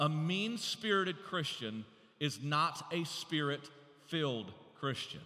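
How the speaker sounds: slow, deliberate, each word spaced and weighted. Repeating a point to listeners so it sinks into their hearts, said slowly. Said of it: "I want to say that slow".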